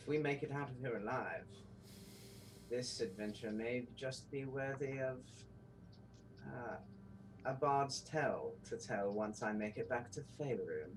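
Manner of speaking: soft under-the-breath mutter to oneself. Speaking in character during a game, under the breath. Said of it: "kind of under my breath".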